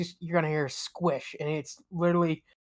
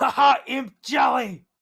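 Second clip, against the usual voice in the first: put-on high, loud shout in character voice; 7 semitones higher, 6 dB louder than usual. Voicing a character who just squashed an imp, yelling in character as Vogel. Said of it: "And Vogel's gonna yell".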